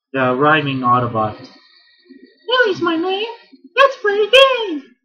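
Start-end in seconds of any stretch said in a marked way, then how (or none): 2.5-4.8 very high-pitched, very loud voice. Quoting Wheelie, the rhyming Autobot: attempted Wheelie voice. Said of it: "I can't do that voice".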